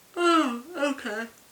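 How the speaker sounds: high, loud words through a big yawn. Wrapping up a video about a show's finale, yawning. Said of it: "I gotta go now because I'm yawning".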